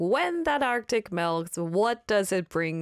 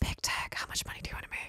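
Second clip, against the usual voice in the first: hushed, whispered, reverent tones. Retrying a question addressed to big tech, in hushed, reverent tones. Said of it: "in hushed reverent tones".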